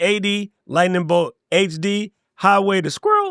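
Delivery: ordinary delivery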